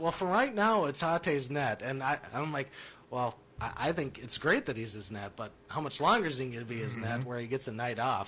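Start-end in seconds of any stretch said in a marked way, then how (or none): 0.0-1.8 teasing, tongue-in-cheek joking tone, pitched up. Speaker retells someone's answer to a question about a player, retelling a joking reply. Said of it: "And he jokingly goes".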